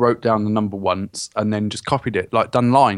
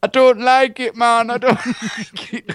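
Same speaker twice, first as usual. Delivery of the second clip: put-on Jamaican accent, very high pitch; 13 semitones higher, 4 dB louder than usual. Retelling an old woman's answer after waking from a coma, jamaican accent. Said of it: "she'd come out of this coma with a Jamaican accent".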